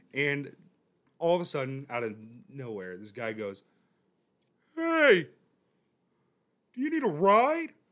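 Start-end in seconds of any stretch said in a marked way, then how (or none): 4.7-7.6 very loud, high, goofy cartoon voice. Retelling a stranger on the street offering a ride, in a Peter Griffin voice. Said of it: "Is he Peter Griffin?".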